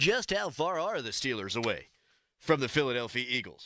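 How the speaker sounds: put-on old-fashioned, old-timey radio broadcaster announcer delivery. Show host, after reading a sponsor line, asks a question: old-timey broadcaster voice. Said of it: "That's what an old-timey broadcaster would sound like".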